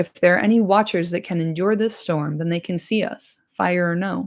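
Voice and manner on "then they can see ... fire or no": ordinary delivery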